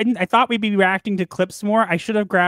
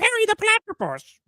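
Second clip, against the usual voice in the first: very high, shrill cartoon villain voice. After trying other voices, the speaker shows off a Doctor Doofenshmirtz impression. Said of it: "My Doctor Doofenshmirtz is pretty good though".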